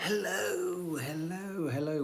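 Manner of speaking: speaking in a whisper. Greeting viewers while others in the house sleep: whispering. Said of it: "We're whispering because the rest of the house have gone to bed".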